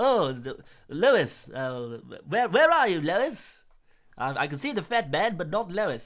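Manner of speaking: loud animated-sitcom cartoon character voice. Doing impressions on a YouTube channel, the speaker calls for Lois: Family Guy impression. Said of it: "I'm doing Family Guy impressions".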